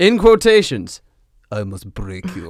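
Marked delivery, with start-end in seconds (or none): 1.5-2.5 very low, soft, hushed mechanical drone, flat monotone. Reading a story aloud, Drago speaks through a voice modulation apparatus: Drago's monotone robot voice. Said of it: "cheap, monotone voice modulation apparatus".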